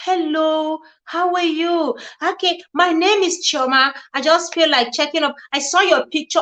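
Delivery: put-on soft, sweet voice. Acting out young ladies chatting with a husband at work, imitating a soft, sweet voice. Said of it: "with their very soft, sweet voice".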